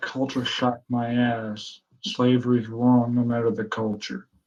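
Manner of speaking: muttering under breath. Voicing a character's angry aside about slavery: muttering under his breath. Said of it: "Kilroy mutters under his breath".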